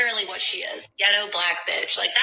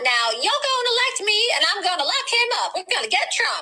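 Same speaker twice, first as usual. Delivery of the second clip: very high, mocking, put-on politician voice; 12 semitones higher than usual. Retelling what a woman politician said, mocking imitation of a woman politician. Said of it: "she goes".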